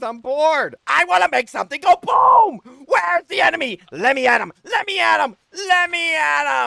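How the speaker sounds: raring to go, over-the-top eager, very high, very loud. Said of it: "Was that a little too much?".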